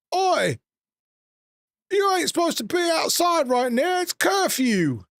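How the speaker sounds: very high-pitched, shouted voice. Game master voicing a city guard calling out to the players, yelling out. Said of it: "hear a city guard yell out".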